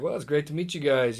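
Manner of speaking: usual speaking voice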